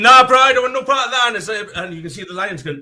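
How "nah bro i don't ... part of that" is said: raised, pitched-up, casual bro zebra voice. Acting out a second zebra who refuses to help: voicing another zebra. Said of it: "And he's like".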